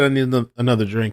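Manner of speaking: plain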